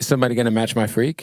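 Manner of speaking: ordinary delivery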